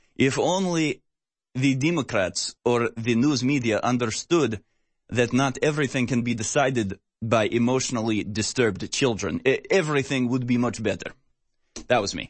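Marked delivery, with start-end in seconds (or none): 0.2-11.1 put-on Russian accent. Adding a final part to a statement he just read: put-on russian accent. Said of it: "I added that last part in a Russian accent".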